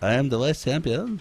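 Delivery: put-on French accent. Commentator joking with a co-commentator during a shooting match, questionable french accent. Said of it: "what the French accent that was".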